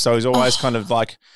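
ordinary delivery

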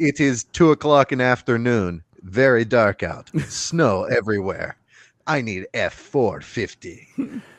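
vague put-on Russian accent. Speaker imagining someone in a dark, snowbound town, in a vague russian accent. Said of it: "I don't know what that accent was".

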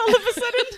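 high, loud, laughing mock English accent. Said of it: "why I said that with an accent".

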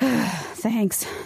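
word let out on a sigh. Reading a story aloud, a man thanking someone: sighing. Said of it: "Zach sighs".

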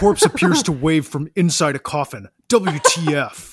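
very slow, weighty, deliberate, every word drawn out. Reading a ghost video caption aloud when asked: Zach Bagans voice. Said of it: "you've got a great Zach Bagans voice".

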